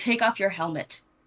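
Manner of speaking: growled, growling delivery. In a game, a player's character follows someone backing away and speaks with a growl. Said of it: "I'm going to like growl at him and say".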